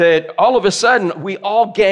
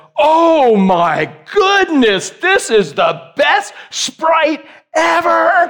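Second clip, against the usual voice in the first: high, very slow, drawn-out enthusiastic gushing delight; 8 semitones higher than usual. Retelling what Alana said after grabbing her drink, imitating Alana's enthusiasm. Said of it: "with that much enthusiasm".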